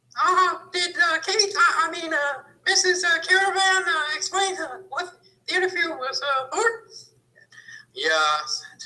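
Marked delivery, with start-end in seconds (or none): 0.2-6.7 squeaked out, very high-pitched. Retelling a question asked at an interview, in a Mickey Mouse voice. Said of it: "Mickey Mouse voice".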